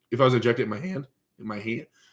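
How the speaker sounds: voice cracking and breaking. Explaining where they would inject synthol, the speaker's voice cracking. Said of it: "my voice cracked".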